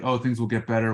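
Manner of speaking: ordinary talk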